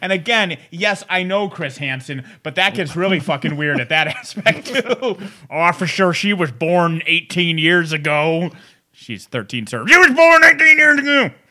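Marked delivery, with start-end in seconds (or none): 9.9-11.3 shrill, very high, loud put-on hillbilly voice. Joking with co-hosts, acting out a man's excuse in a hillbilly pedophile voice. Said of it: "That's my hillbilly pedophile voice".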